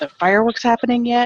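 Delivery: put-on high, fast, eager, excited kid voice.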